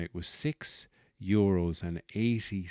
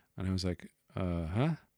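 ordinary delivery

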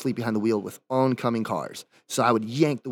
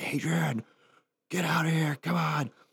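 high, held-in screaming; 5 semitones higher, 4 dB quieter than usual. Retelling how he sat in a truck screaming for the speaker to come out; retelling his screaming. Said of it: "he's sitting there just screaming".

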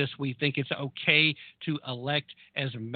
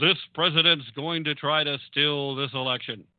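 booming, forceful radio announcer-style commercial read. Quoting Biden's words about the election in a forceful radio ad voice. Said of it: "I used my forceful radio ad voice".

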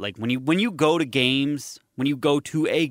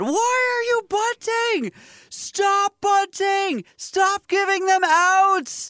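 acted, very high, slow, frustrated screaming, "outs" stretched; 4 dB louder than usual. Retelling watching a bunt attempt from the outfield: imitating himself screaming. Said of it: "I'm screaming through the whole at bat".

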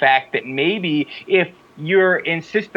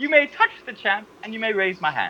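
woman's voice in a put-on British accent; 6 semitones higher, 4 dB quieter than usual. Re-doing a woman's promo line for a doubting listener; British-sounding impression of a woman. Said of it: "you sound exactly British".

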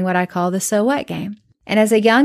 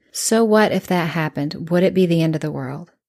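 mock unruffled, patient, very calm, even counselor voice; 3 semitones lower than usual. Retelling what a counselor asked: imitating a counselor speaking calmly. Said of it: "she would say very calmly".

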